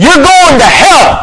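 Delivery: very high, loud, shrill fire-and-brimstone shout. Showing what the speaker could go out there and say, yelling. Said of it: "And I can yell like that".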